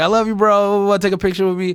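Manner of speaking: put-on heavy Argentine Spanish accent. Retelling a fan from Argentina who spotted them at the airport, thick Argentine accent. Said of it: "like thick accent".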